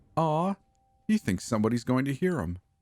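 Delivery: high, fond, doting voice. Reading a horror story aloud, a captor taunting her victim: doting voice. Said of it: "Becca says in a doting voice".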